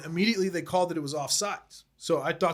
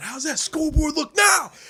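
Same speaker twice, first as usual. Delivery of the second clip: mock taunting yell, higher and louder; 11 semitones higher, 7 dB louder than usual. Retelling taunting a rival fan at a game: imitating own yelling. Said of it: "I'm yelling".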